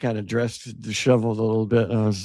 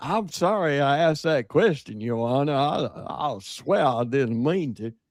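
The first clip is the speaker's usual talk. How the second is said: put-on country-boy voice; 4 semitones higher than usual. Describing an actor's role, imitating his character addressing the judge, in a country-boy voice. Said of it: "he played such a huckleberry. Uh, country boy".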